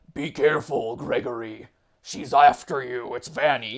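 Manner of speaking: eerie, ghostly, spooky voice. Discussing the Security Breach trailers, the speaker quotes Glamrock Freddy in a spooky voice. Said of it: "it's like the spooky voice".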